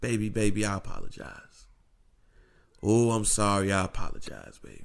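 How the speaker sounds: begging, pleading voice, repeated over and over. Acting out a cheating husband apologizing to his wife: acting out a pleading apology. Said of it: "Let's just say, for instance, I cheat on my wife".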